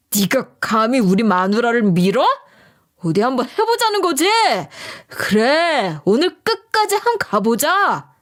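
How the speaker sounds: raging, enraged shout. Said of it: "길길이 날뛰면서 이리 소리치더라고요".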